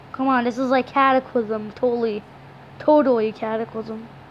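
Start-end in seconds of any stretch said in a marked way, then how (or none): none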